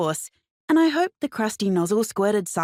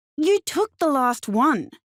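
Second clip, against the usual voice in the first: slow, high speech through clenched, gritted teeth; 7 semitones higher than usual. Narrator confronting the finance manager who took the last one, through gritted teeth. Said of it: "I said through gritted teeth".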